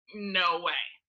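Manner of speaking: flat, expressionless delivery. Retelling how people answer a shared confession: imitating a deadpan reply. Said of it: "just deadpan".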